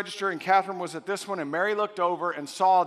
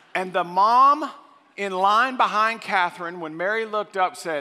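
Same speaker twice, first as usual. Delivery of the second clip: ordinary delivery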